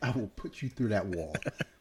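mock menacing tone, teasing, not serious. Retelling your reaction to other kids touching your toys, mock threat. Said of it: "joking threat to kids touching toys".

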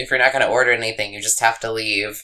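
normal talking voice

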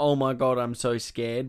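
ordinary delivery

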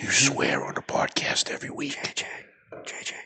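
breathy, hushed, very quiet whisper. On a podcast, answering a co-host who just apologized for swearing: whispering. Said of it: "Why are we whispering?".

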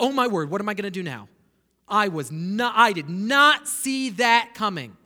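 loud, caught-short, caught-off-guard blurted exclamation. Picturing God surprised by Jonah's refusal, imitating God caught off guard. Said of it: "and God's like".

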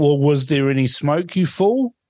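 quick, rattled-off, mild half-scream. Recalling a fire alarm, the speaker reenacts screaming at the television. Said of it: "I was screaming at the television saying".

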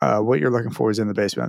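mock, dead-serious deadpan tone. Retelling what a man said in a sudden moment, imitating a deadpan serious tone. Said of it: "deadpan serious".

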